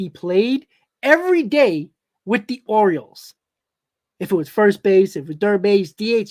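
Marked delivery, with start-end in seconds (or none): 0.0-3.3 slow, deliberate, each word laid out carefully. Talking about a player with the Orioles, repeating a line slower, deliberate. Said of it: "Let me say it slower".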